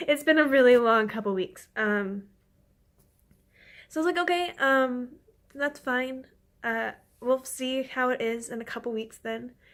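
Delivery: emotional, tearful, holding back tears. Updating followers, the speaker admits being emotional: tearing up. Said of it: "Sorry, I'm starting to tear up".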